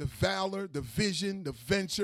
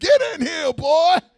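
very loud, high-pitched, shrill yell; 9 semitones higher, 14 dB louder than usual. Imitating a mother calling her boys in for dinner: imitating a mother's loud call. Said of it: "this same voice can dwarf the sound of an amplifier when she calls her boys".

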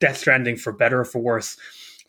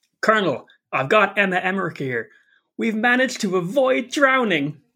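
cheerful, very happy voice with raised pitch; 8 semitones higher than usual. Performing a game line the way the voice actor delivers it, imitating cheerful Raiden. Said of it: "He's so happy".

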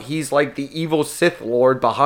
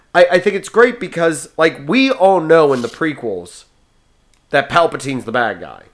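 ordinary talk

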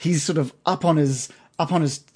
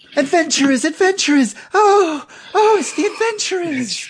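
put-on thrilled, eager young boy character voice; 4 dB louder than usual. A little halfling boy runs up to the adventurers, excited halfling boy voice. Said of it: "the little halfling boy that you've seen before comes running up".

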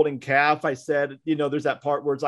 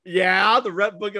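mock sarcastic tone, higher pitch; 5 semitones higher than usual. Retelling a reply to the camp pastor and director: retelling a sarcastic reply. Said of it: "I said it sarcastically".

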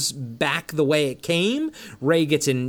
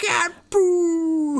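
put-on marble-mouthed yell, much higher pitch; 13 semitones higher than usual. Retelling how the principal yelled at the car, as if with a mouthful of marbles. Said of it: "she says it like with a mouthful of marbles".

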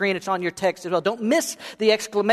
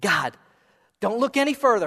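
eager, pleading tone. Retelling Isaiah's answer to God's call: acting out Isaiah begging. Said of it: "Isaiah's begging to go".

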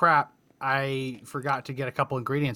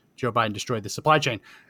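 ordinary talk, nothing marked

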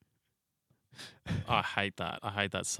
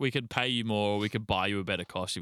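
ordinary delivery

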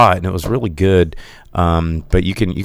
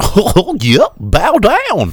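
put-on dopey cartoon dog voice, higher and louder; 4 dB louder than usual. Joking about evil Disney characters, as a henchman in the back: imitating Goofy. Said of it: "Goofy in the back being like".

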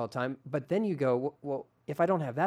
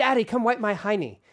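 put-on loud, high-pitched child's yell; 8 semitones higher, 6 dB louder than usual. Retelling how a daughter banged on the door: imitating a child yelling. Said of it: "And she's yelling that".

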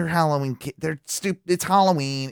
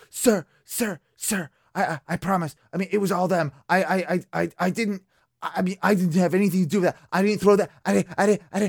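mock quaking, terrified stammering, pleading tone; 4 semitones higher than usual. Retelling how he answered when caught, imitating him quaking in his boots. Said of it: "he was just quaking in his boots".

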